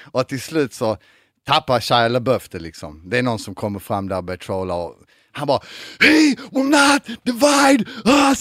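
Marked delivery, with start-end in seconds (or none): 6.1-8.5 mock screeching, word by word, very high and slow. Retelling how Shia LaBeouf snapped and screamed at some guy, imitating Shia LaBeouf screaming. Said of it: "så skriker på någon snubbe".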